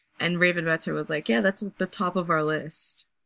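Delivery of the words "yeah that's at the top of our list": mimicked sarcastic tone. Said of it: "Very sarcastically".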